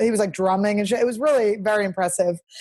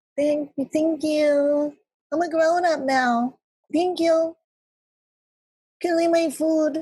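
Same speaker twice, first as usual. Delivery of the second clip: small, high, drawn-out put-on little voice; 6 semitones higher than usual. Mocking the other speaker's fake little voice to the delivery person: imitating a fake little voice. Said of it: "but you're like".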